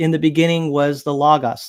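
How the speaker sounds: normal talking voice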